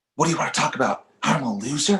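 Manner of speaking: strong, forceful stage whisper. [name] arguing with Hannah while David sleeps: loud whisper. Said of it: "both loudly whispering".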